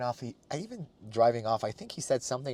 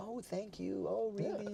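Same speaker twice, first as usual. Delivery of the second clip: super polite, very high and hushed voice; 9 semitones higher, 13 dB quieter than usual. Picturing how a polite Canadian would reply: imitating a super polite Canadian. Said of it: "people in Canada are super polite".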